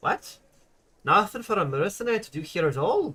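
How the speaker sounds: put-on Scottish accent. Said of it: "The goal for this is to do the voice from Brave".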